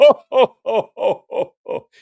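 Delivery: loud, high, jolly ho-ho-ho laugh.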